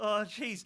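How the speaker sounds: loud panicky blurt.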